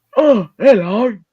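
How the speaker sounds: put-on old grandad, very high, shrill and very loud. Giving the best granddad impression possible: put-on old grandad voice. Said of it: "Best impression of a granddad I can possibly do".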